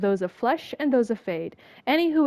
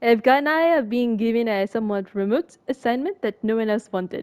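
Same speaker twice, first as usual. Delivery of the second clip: fake, clumsy, badly put-on French accent. Reading a letter aloud after asking whether to try a bad french accent. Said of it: "Should I do a French accent?".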